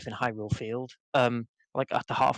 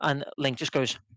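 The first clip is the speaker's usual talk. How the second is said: usual speaking voice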